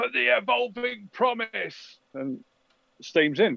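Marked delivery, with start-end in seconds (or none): 0.0-2.0 shouted, rough, drawn-out, high-pitched battle cry. Game master voicing an attacker as the door bursts open, shouting a battle cry.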